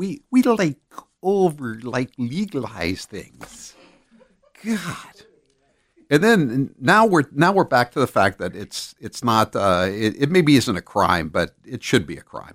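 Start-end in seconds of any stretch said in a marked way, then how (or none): 0.0-3.7 put-on valley girl voice. Mocking a woman the speaker thinks looks guilty, in a Valley girl voice. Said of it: "She talks like a Valley girl".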